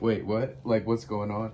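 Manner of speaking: normal talking voice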